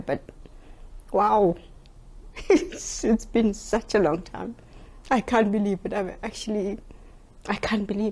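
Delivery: laughing through emotion, holding back tears. After a long time waiting on the judge, laughing to keep from crying. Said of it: "I'm laughing because I don't really".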